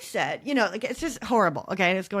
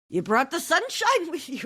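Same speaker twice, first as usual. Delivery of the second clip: put-on pitched-up, old Irish cab driver accent; 9 semitones higher than usual. Retelling what an old Irish cabbie said: imitating an old Irish cabbie. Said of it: "I can't do it".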